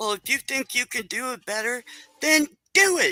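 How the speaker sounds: put-on snotty, condescending tone. Speaker recounts what a woman said that bothered them, mocking her snotty, condescending voice. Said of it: "in her snotty, condescending, nasty voice".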